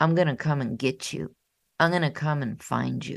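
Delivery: fast, menacing, threatening voice. Speaker recounts the feared warden's voice in a client's head: mock threatening voice. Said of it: "It's a threatening voice".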